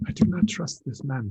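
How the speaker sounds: voiced stage whisper. Voicing a character leaning in to a seatmate at a table: whispering.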